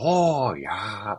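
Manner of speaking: little sweet-guy comedy voice slipping slightly Canadian. Discussing Adam Sandler movies and trying out an Adam Sandler voice. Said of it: "I was trying to get my Sandler voice".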